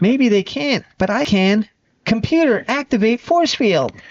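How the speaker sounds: very high-pitched, put-on robotic character voice. Retelling a superhero episode, the speaker performs Alpha's line in an Alpha voice. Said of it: "That's my best Alpha voice".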